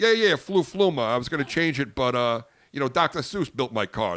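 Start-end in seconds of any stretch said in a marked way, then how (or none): 0.0-1.0 play-acted very high, loud, bluffing fake confidence. Retelling a conversation about a misfiring car part; acting out faking confidence. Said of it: "I'm trying to act like I'm not stupid".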